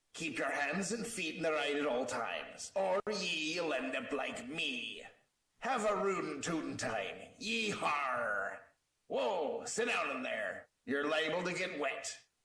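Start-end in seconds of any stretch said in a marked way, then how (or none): 0.2-8.6 put-on mix of pirate and cowboy voice. Ride character giving riders the rules before setting off, Captain Foxy pirate-cowboy voice. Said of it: "Captain Foxy's Cowboy Adventure".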